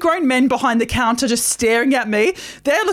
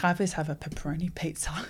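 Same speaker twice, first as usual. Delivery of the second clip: put-on near tears, much quieter, lower; 8 semitones lower, 13 dB quieter than usual. Retelling ordering a pizza at Domino's: retelling holding back tears. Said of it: "don't cry, [name], don't cry".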